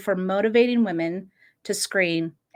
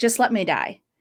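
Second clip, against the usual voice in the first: mock tearful, crying, begging tone. Retelling a struggle to stop someone's bleeding: imitating someone crying. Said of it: "she looks at me and she's crying".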